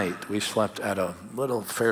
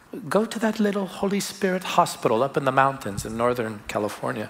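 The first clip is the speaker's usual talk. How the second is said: put-on New Zealand accent; 4 semitones higher than usual. Retelling what their mentor told them in 2016, Joy Dawson's New Zealand accent. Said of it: "in her little New Zealand Kiwi accent".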